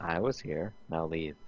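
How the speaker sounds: acted, grave, expressionless, dead-serious flat monotone. Retelling telling a boy to leave the seat: imitating own serious monotone. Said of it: "the most serious monotone, like, voice".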